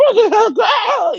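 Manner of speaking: very high-pitched, hysterical, panicked freak-out.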